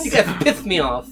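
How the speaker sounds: high, loud, huffy diva tantrum. Friends joke that Dylan has become a diva; imitating Dylan as a diva. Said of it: "Why do you sound like that?".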